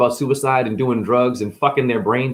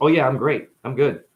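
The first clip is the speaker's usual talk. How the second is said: mock deadpan delivery. Speaker acts out how people answer when asked how they're doing, imitating a deadpan answer.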